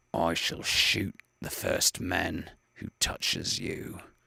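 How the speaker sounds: spoken through clenched, set teeth. Reading a story aloud, a man threatening attackers: said through set teeth. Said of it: "he said between his set teeth".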